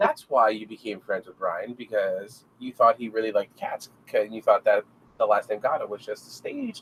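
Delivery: ordinary delivery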